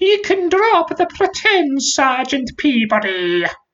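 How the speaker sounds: very high, nasal, screeching dragon voice. Sir Rabran, illustrating the dragon with his elbows, speaks its line in a nasal screech. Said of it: "began to speak in what can only be described as a nasal screech".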